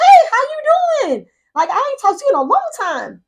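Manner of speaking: very high, chirpy, bubbly, swooping voice. Speaker reenacts greeting Sam on the phone, retelling her own bubbly tone. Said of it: "my regular, normal, bubbly tone".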